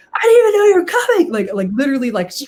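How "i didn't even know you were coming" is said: very high-pitched, loud shrieking scream. Retelling running into a friend in an office: imitating screaming at someone. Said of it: "screaming at him".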